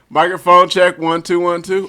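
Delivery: shouting. A speaker starts the recording with a microphone check; yelling into the microphone. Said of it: "you just yelled into the fucking microphone".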